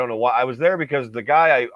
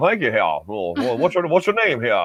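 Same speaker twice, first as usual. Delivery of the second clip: put-on, exaggerated Southern drawl. Retelling what a man said to him, in a Foghorn Leghorn accent. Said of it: "the Foghorn Leghorn accent".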